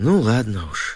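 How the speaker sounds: said with a sigh. Narrator reads the grandmother answering Tom from the attic window, sighing. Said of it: "вздохнула бабушка".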